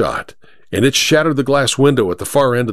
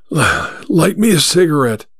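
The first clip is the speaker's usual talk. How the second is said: put-on slow, wheezing, dying-sounding voice; 4 semitones higher than usual. A stranger lying in a roadside ditch, head in a woman's lap: wheezing. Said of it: "he wheezed".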